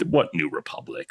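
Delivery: mock-snobbish, poised officer voice. Speaker acts out a villain's stance, imitating a snobbish military tactician. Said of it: "snobbish, poised military tactician who's sort of like".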